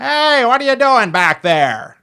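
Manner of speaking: very high, prying, crazy-sounding nosy voice. Retelling a neighbor questioning them at home: imitating crazy next door neighbor. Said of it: "It really is that accurate".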